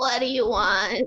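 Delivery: crackling intercom voice. Voicing a control tower answering a ship's call: crackling intercom voice. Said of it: "the little voice crackles over the intercom".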